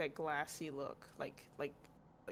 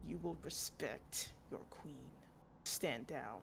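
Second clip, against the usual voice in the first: low, quiet, sneering, contemptuous queenly voice; 4 semitones lower, 5 dB quieter than usual. The game master voices the queen after the missiles hit her, sneering at the party. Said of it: "and she sneers".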